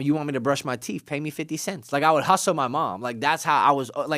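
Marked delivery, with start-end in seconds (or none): none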